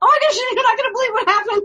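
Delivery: very high excited squeal, rushed and screamed. Retelling calling her husband after seeing the owl: retelling screaming at her husband. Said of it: "I'm screaming at him".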